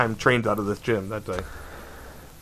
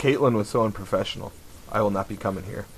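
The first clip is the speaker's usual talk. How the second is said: ordinary talk, nothing marked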